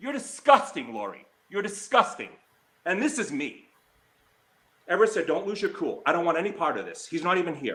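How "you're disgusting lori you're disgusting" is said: angered. Speaker confronts someone for going after another person, angry. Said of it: "but I'm mad".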